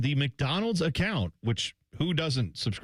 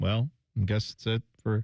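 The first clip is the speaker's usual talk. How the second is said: mock mopey, sad, defeated, resigned tone; 4 semitones lower than usual. Imitating someone giving up on a discontinued menu item: imitating sad resignation. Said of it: "sadly kicking a stone down the road".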